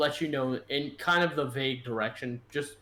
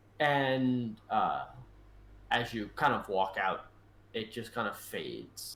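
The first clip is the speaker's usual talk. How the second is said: ordinary talk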